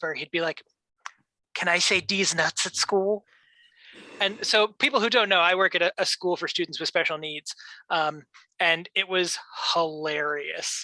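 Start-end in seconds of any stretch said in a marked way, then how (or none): 1.5-3.2 whispered voice. Retelling a visiting student's repeated question at school, retelling a whisper. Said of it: "He would like whisper".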